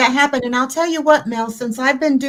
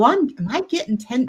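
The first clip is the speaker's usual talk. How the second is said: ordinary talk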